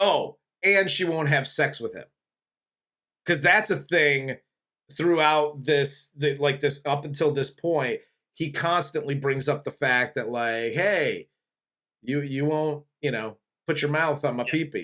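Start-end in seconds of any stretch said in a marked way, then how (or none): 10.7-14.9 creepy put-on voice. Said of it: "he keeps saying it in the creepiest ways".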